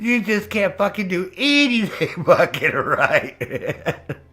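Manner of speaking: mock fed-up, gasket-blowing, upset, high and slow. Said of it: "watch her get upset with me".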